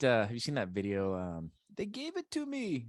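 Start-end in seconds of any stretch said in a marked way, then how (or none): 1.7-2.9 put-on Latin American accent, higher.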